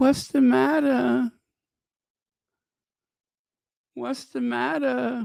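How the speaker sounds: very high, frightened, shaky quavering voice. Imagining facing someone frightening at the door; acting scared and shaky. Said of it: "In that scared, shaky voice".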